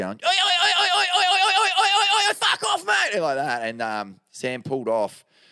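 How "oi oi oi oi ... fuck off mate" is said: very high, shrill, loud, repeated yelling. Speaker retelling a kid yelling at Sam for dropping in on him, imitating a kid yelling. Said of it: "the kid started yelling at him".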